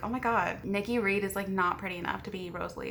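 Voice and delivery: ordinary talk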